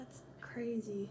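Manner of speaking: slow, soft, hushed whisper.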